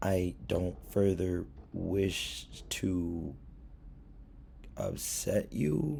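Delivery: very slow, deliberate, a little belittling.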